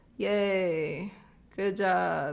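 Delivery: casual, offhand, nonchalant cheer with drawn-out yay. Imitating a gif of a guy throwing glitter: nonchalant cheer. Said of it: "very nonchalantly".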